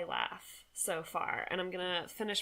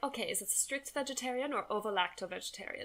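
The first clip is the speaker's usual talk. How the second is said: put-on German accent; 3 semitones higher than usual. Retelling a lady's question while changing a meal order, imitating her German accent. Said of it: "this is my German accent".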